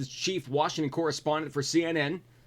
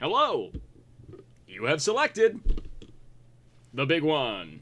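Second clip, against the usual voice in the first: swooping, movie-style announcer voice. A quiz host says they basically have the Moviefone guy voice. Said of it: "I basically have the movie phone guy voice".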